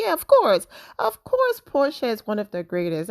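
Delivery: mock, overdone, sing-song sarcasm. Quoting her own reply from a video, retelling her sarcastic reply. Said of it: "I was being sarcastic in that video".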